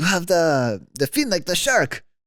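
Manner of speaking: put-on Italian accent, loud and swooping. Retelling what a medic told the speaker after a fall, italian accent. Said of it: "That was a great voice".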